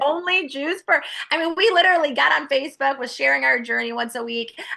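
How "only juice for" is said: high-pitched, incredulous, laughing through the words. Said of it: "being a good wife, I'm like".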